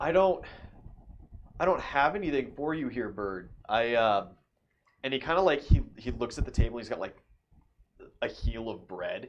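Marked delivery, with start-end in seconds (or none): 0.0-3.5 pitched-up, heaved out on a sigh. Storyteller voicing a man whom a bird keeps flying at; sighing. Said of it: "He just like sighs and he's like".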